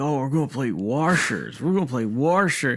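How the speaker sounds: acted over-eager, swooping, gushing thrilled excitement. Mocking people who love playing washers, the speaker is imitating excited people. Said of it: "I've seen people get fucking excited".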